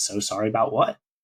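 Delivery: ordinary delivery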